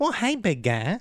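very high nerdy sitcom-style voice. Asked to redo the impression he used to do, Urkel impression.

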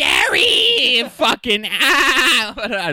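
very high, loud cartoon squeal with ah dragged out. Imitating an annoying cartoon character yelling: worst SpongeBob impression ever. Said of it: "This is the worst SpongeBob ever".

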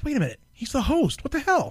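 high, blurted, surprised disbelief.

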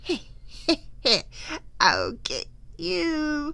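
storybook witch's cackle with swooping pitch. Wendy shows the ghost how witches cackle, cackling like a witch. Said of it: "Witches cackle like this".

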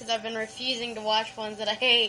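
ordinary talk

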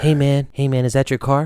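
imitated near-whisper. Retelling how a man came up behind and asked: imitating a near-whisper. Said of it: "almost whispers into my ear".

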